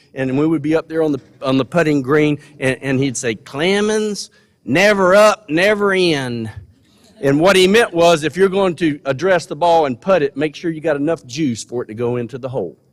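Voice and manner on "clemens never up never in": very slow, drawn-out Tennessee Southern drawl. Recalling a golf coach on the putting green, in Joe Fields's drawn-out Southern accent. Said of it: "he had this drawn out Southern accent".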